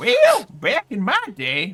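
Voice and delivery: drawn-out, loud, sing-song delivery. Joking about being an old man: old Tommy Prospector voice. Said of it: "old Tommy Prospector".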